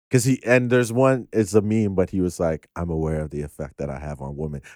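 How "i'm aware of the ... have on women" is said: put-on deadpan, lower, quieter and faster. Retelling a guest star's line from a show, in a mock deadpan delivery. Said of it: "he said it in such a like deadpan".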